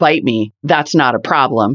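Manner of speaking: mock callous, unsympathetic dismissal. Retelling how the company first handled a recall: imitating an unsympathetic response. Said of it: "Sounding completely unsympathetic".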